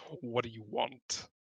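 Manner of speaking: very deep, rasping, gravelly creature growl. Retelling what he asked them, in a deep, gravelly voice. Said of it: "this deep, deep, gro- grovelly voice as he asks".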